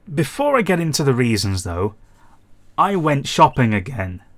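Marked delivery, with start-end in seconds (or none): 2.7-4.1 voice cracking and breaking. Back after a quiet spell, telling viewers he went shopping again, voice cracking. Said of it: "Nice voice crack".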